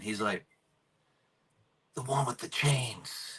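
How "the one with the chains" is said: soft, secretive whisper under the breath. Retelling a classmate's reply in the back of class: imitating a whisper. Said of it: "Whispered that to me in the back of the class".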